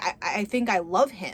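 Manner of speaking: put-on sobbing while talking. Retelling a movie scene, quoting a character's confession: imitating someone sobbing. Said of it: "in between sobs".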